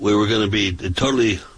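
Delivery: ordinary talk, nothing marked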